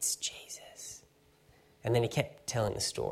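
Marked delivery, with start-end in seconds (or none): 0.0-1.0 very quiet, breathy, hushed whisper under the breath. Speaker retells a little girl in the front row; imitating a girl's whisper. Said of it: "she whispered under her breath".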